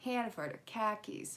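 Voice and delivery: mild Boston accent, 'car keys' sounding like 'khakis'. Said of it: "almost a box-, a Boston accent".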